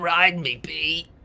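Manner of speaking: very raspy, hoarse, croaking smoker voice. Retelling what the creature says as it turns to you, very raspy smoker voice. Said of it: "in a very raspy smoker voice".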